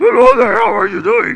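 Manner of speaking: very high, raspy puppet voice. Speaker, voicing Samson, slips into a Muppet voice. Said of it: "I'm going to sound like that Muppet".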